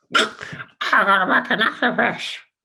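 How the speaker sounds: very high, slow, drawn-out cartoon duck voice. Giving an example of speaking in a chosen voice, in a Donald Duck voice. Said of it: "in the voice of uh, Donald Duck".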